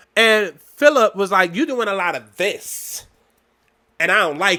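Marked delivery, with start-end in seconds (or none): 1.6-4.6 put-on, imitated sassy voice. Mocking what the manager said in a restaurant: imitating Philip's sassy tone. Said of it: "most sassy".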